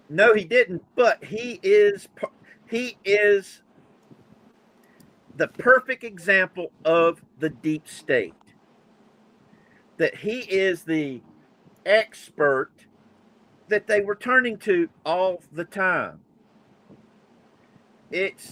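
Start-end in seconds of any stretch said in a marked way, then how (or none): 2.7-16.2 fed-up, frustrated, exasperated tone. Talking with others and losing patience, frustrated. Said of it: "I'm getting so frustrated".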